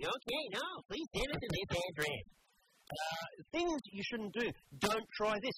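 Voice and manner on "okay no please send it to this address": put-on, fake American accent. Retelling a phone call to renew a subscription: retelling a fake American accent. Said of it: "I had to stick with the American accent".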